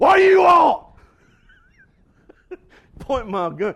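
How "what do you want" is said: very high, shrill, booming shouting. Retelling confronting an unknown visitor with his gun pointed, retelling a loud shout. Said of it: "the only thing I had going for me was a loud voice".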